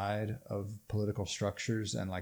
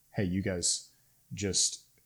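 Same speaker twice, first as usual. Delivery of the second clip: usual speaking voice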